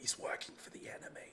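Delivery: secretive whisper, leaning close into the ear. Playing a character warning another that someone works for the enemy: whispering in his ear. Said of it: "a whisper in his ear".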